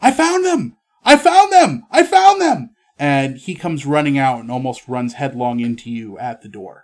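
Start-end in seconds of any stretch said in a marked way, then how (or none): 0.0-2.7 very high, very loud, shrill, thrilled yelling. A game master voicing a character yelling from inside; very excited shout. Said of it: "a very excited shout as he starts yelling".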